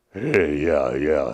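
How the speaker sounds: very low, rumbling bass voice. Describing a young man he once met, imitating Mike's low rumble. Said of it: "kind of like that, really low voice".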